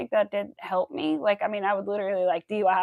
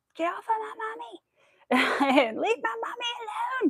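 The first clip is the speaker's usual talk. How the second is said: put-on frightened little girl scream, very high and drawn-out; 13 semitones higher than usual. Retelling when a cat attacked her mother, reenacting her six-year-old self screaming. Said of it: "I was screaming".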